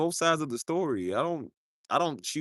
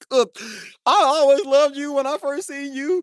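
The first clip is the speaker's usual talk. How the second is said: wailing fake crying, very high and very loud; 10 semitones higher, 8 dB louder than usual. Acting out own future wedding vows, throwing snot bubbles: mock crying. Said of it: "I'm just throwing snot bubbles".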